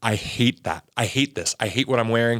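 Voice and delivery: put-on sobbing outburst. Retelling what someone said while sobbing in the car: imitating Rachel sobbing. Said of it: "she can't even get, like, her full sentences out".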